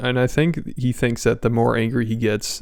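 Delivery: plain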